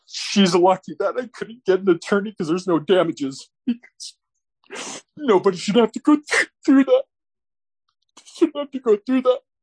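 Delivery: high, breaking, tearful voice, getting emotional. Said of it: "getting emotional there".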